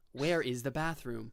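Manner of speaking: plain phone-assistant voice. Retelling a scene where a phone speaks a signed question aloud, simple Siri voice. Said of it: "Like simple like Siri voice".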